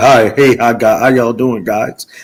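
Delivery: low voice. Retelling how another caller came in: imitating Checkmate's distinguished greeting. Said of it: "the way you came in, you like".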